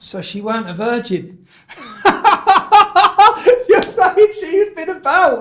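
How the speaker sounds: speech mixed with laughter.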